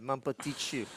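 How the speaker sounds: attempted French accent. Trying to say a French pet name after being asked: attempted French accent. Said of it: "My Italian accent is much better than my French accent, but I will try".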